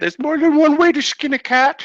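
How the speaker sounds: put-on very high old person voice. Quoting a saying old timers use, in an old person voice. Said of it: "person voice".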